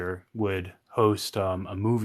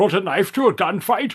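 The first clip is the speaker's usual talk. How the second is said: put-on Scottish movie-star voice, higher pitched and louder; 11 semitones higher, 8 dB louder than usual. Doing an impression after announcing it: Sean Connery impression. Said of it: "here it goes".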